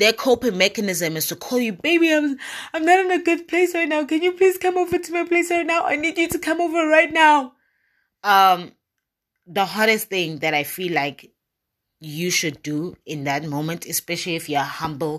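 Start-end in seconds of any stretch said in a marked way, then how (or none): 1.7-7.5 very high, frantic, stammering, panicked pleading. Acting out a caller who is panicking and begging: imitating a panicking plea. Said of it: "they're screaming, they're panicking".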